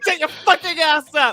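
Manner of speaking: put-on anger. Retelling a confrontation with a man in his car, acting out being angry. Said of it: "You got an angry European".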